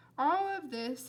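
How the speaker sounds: ordinary delivery, nothing marked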